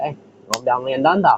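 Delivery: put-on, attempted Australian accent. Joking about being deported, the speaker tries a put-on Australian accent. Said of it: "It's my Australian accent".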